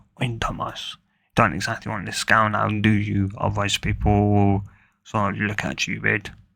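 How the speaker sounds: ordinary talk, nothing marked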